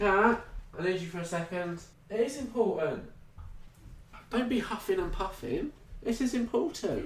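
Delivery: worried, urgent, concerned tone, very high-pitched. Calling kat over to give her thoughts as a listener asked, concerned tone. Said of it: "You sounded concerned".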